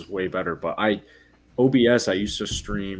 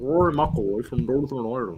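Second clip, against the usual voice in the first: bad, weak put-on Northern Irish accent, sing-song; 4 semitones higher than usual. On his golf podcast, the speaker shows how he says a golfer's name: bad Northern Irish accent. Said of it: "But I'm not good at it either".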